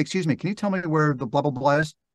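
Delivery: plain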